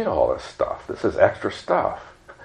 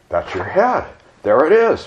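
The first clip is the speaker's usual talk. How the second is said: sudden, high, rising exclaiming cry; 7 semitones higher, 7 dB louder than usual. A narrator reads her friend answering her after the blow to the head, exclaiming. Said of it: "her friend exclaimed".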